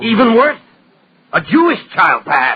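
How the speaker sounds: loud, high-pitched shouted outburst. In a drama, arguing about the child the family took in, shouting. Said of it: "Stop shouting".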